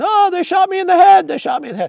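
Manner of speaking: shrill, very high, loud screaming, acted out. Describing a filmer hit in the head by a pepper ball, imitating a man screaming. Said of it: "starts screaming".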